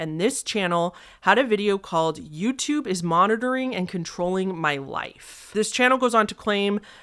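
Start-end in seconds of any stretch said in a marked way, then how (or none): none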